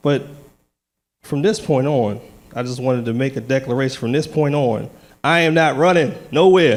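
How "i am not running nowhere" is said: louder, declaring delivery with authority. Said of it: "I gotta say it with authority".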